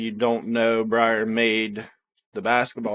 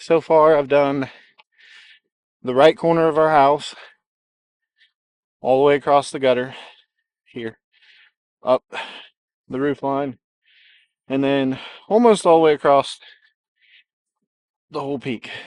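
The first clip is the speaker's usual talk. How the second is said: winded, out of breath, louder; 4 semitones higher, 7 dB louder than usual. Describing progress hanging lights along the roof, the speaker is out of breath. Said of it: "I'm out of breath".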